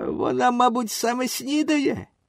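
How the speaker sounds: jeering, mocking, high-pitched sing-song voice. One of his companions answers a boy's question by the sea: mocking. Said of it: "насмішкувато відповів один з них".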